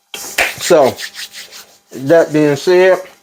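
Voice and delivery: slow talk through a mouthful while chewing. A video host wrapping up mid-bite, talking with mouth full. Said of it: "sorry, mouthful of food".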